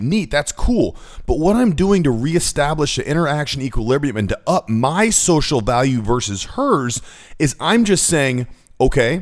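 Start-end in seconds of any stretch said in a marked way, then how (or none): 8.8-9.2 "okay" said with rising, upward pitch. Explaining how he answers in a conversation, rising pitch on okay. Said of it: "with the tone of voice going up".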